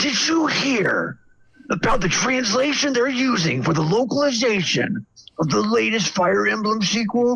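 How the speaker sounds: fake furious outburst. Acting out ranting at a stranger in a grocery store: mock angry rant. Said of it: "just getting super pissed".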